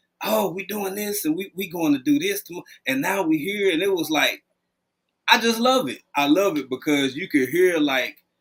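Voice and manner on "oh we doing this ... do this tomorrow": ordinary delivery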